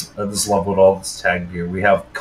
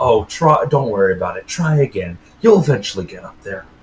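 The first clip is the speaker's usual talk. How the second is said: mock patronizing, needling, condescending and taunting tone. Retelling how the game's developer taunts you when you fall: imitating a condescending taunt. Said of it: "the most condescending fucking way".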